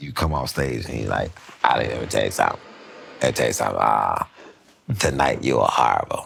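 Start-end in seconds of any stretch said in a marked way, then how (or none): 1.6-6.3 creaky, rough-edged comic's voice. Retelling what a comic said after sets, doing Rodney's voice. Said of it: "I don't do a lot of impressions, but this was Rodney".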